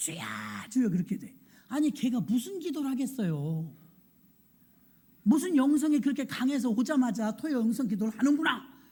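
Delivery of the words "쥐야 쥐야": put-on crisp small child voice, quieter. Telling how church elders reacted to a small child at prayer: imitating a small child's crisp voice. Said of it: "조그만 것이 쥐야, 목소리가요 찰져요".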